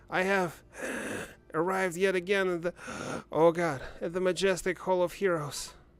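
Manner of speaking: hyperventilating, gasping for air between words.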